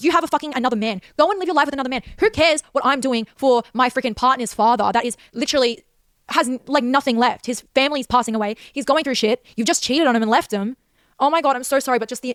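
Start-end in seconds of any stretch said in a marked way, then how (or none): 0.0-10.8 venting raw, boiling, furious anger. Ranting on a podcast before apologizing: angry rant. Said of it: "I need to tone it down, but just the amount of anger I feel".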